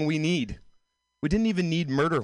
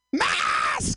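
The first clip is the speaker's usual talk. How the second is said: mock scream, higher pitched; 10 semitones higher than usual. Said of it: "pulling your mask down to scream".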